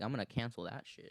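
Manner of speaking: ordinary delivery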